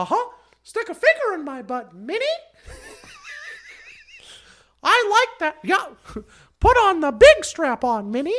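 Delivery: very high, loud voice with swooping pitch. Doing a crude bit with the Mickey Mouse voice, addressed to Minnie. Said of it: "I take the Mickey Mouse thing".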